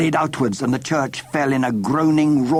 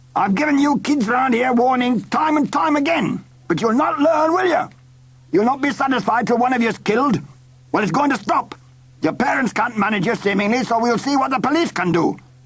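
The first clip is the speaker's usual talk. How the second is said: angry scolding pitched very high; 10 semitones higher than usual. The foreman, relieved no child was inside, scolds the children, angry. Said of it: "He wore a leather belt covered with regimental badges and appeared to be the foreman. / said the biggest of the men. He wore a leather belt covered with regimental badges and appeared to be the forema".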